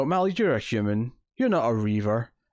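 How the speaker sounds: ordinary talk, nothing marked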